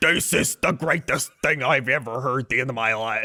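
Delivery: put-on full-on, thick, super-Chicago accent. Speaker describing a station's host, an ex-Bears player, imitating his super Chicago accent. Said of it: "He's like super Chicago".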